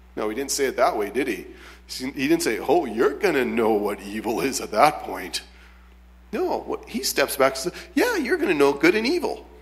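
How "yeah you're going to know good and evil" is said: very high, sweet, nice friendly tone. Retelling what he said to the woman about the tree: put-on nice friendly voice. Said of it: "Say it in a nice friendly voice".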